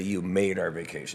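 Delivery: plain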